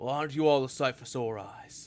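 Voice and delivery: character voice, called out loudly down a hall. Voicing a knight greeting the group from afar: loud in-character greeting. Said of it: "Can you lower your tone of voice".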